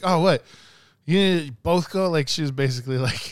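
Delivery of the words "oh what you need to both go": put-on raised, high, scolding yell. Retelling how mom yelled about both going: imitating mom yelling. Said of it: "yelled at me".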